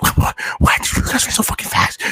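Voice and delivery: put-on angry whisper. Retelling hiding quietly in a bathroom, cursing at friends: imitating an angry whisper.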